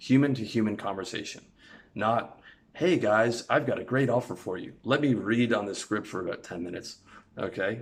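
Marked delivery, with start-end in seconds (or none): 2.7-7.0 canned, scripted salesman pitch delivery. Showing how not to talk on a sales call: sounding like a salesman. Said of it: "the last thing you wanna sound like when you're selling is a salesman".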